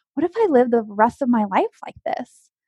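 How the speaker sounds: ordinary delivery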